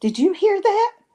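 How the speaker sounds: high, startled delivery.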